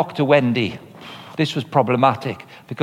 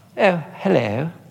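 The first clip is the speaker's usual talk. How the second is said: put-on posh, regal, royal-sounding English accent; 2 semitones higher than usual. Retelling a course member's introduction: imitating Jemima, sounded like the Queen. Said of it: "Sounded like the Queen".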